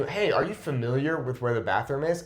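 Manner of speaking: ordinary talk, nothing marked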